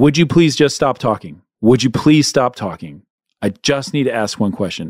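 acted loss of patience, snapping. Retelling the moment he finally snapped in a conversation, retelling raising his voice. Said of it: "I raised my voice and I said".

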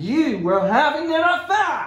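loud accusing tone. Inspector questioning a suspect about her fiancé's death, raised accusing voice. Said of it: "Don't you raise your voice to me".

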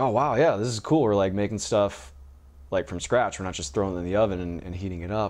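normal talking voice

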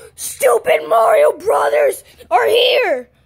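angry heated outburst. A character speaks to Mario while the others react: angry. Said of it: "you can't just get all freaking mad".

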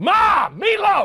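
growling yell. Showing another speaker how to yell the line at Mom: yell with more growl. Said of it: "little more growl".

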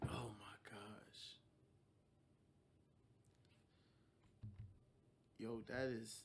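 hushed whisper, overcome with emotion. Reacting to what he said about them, getting emotional. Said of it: "I'm literally getting emotional".

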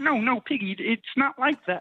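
put-on frog puppet voice. Voicemail skit, answering Piggy as Kermit: Kermit the Frog voice. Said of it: "Kermit the Frog here".

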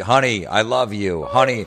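put-on, loud, drawn-out nervous shout. Retelling a friend yelling from a kayak: imitating someone yelling nervously. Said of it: "So he was all nervous. He's like".

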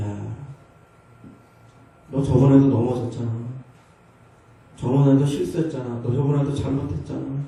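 low, nagging murmur.

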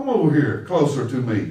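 put-on deep elderly man voice.

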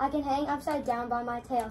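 ordinary delivery, nothing marked

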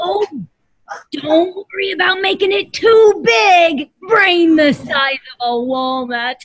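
high, slow dinosaur voice. Voicing a dinosaur who drops in with tips for the kids: Allie the Allosaurus voice. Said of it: "So that was Allie the Allosaurus".

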